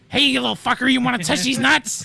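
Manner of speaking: high, loud, really angry, taunting squirrel voice. Imagining squirrels being really angry: imitating an angry squirrel. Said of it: "really angry".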